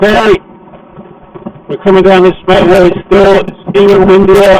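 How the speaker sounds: loud shouting. Heading down a windy motorway, talking to viewers who may not hear, shouting over wind. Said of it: "I'm shouting because you probably can't even hear me".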